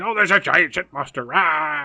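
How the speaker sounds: loud, frantic, unhinged, crazed raving rant. Retelling how the sheriff acts in a movie scene: imitating someone ranting crazily. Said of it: "being all crazy and stuff".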